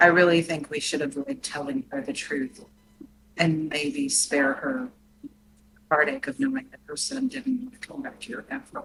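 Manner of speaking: secretive, whispered delivery. Speaking in character so that Cora does not hear: whispering.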